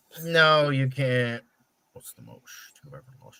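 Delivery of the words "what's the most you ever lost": hushed, fast, flat and even whisper. Showing another speaker how the film line should sound: Anton voice. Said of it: "you gotta do it like that".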